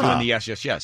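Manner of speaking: ordinary talk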